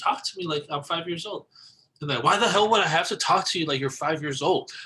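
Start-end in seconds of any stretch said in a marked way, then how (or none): 0.0-1.5 put-on, most genuine, earnest, sincere voice. Speaker re-enacts what they used to tell people, retelling in a genuine voice. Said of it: "I would say it in like the most genuine voice ever".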